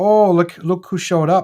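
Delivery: attempted Minnesota accent. Repeating a greeting to someone who showed up, attempting a Minnesota accent. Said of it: "I'm trying to do my best Minnesota accent".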